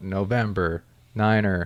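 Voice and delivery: stretched, dragged-out enunciation, very slow. Showing how not to say a call sign: drawn-out November Niner. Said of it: "I don't mean drag it out".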